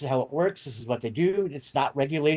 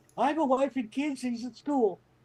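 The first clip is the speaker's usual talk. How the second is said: mock, high-pitched, blurted-out gut-reaction pleading yell; 10 semitones higher than usual. Retelling what he yelled out as a gut reaction, retelling a yell. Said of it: "You yelled out".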